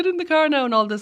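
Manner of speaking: bright, slightly fake cheer. Describing how parents talk to their teenagers, in a mock-cheery parent voice. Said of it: "You know that cheery voice".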